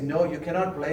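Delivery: ordinary delivery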